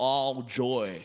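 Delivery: put-on American accent. Leading a crowd in repeating a phrase in different accents, american accent. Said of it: "Say all joy like an American".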